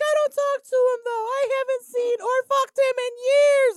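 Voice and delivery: put-on tearful crying scream, very high, shrill, loud. Retelling what a woman said on the phone at the store, imitating someone crying. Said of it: "and she's crying".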